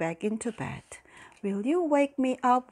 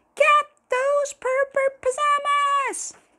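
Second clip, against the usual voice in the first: very high, shrieking, drawn-out scream; 7 dB louder than usual. A queen in the distance screams after a fleeing boy and fairy, screaming. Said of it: "Walter could hear Queen Dentina screaming".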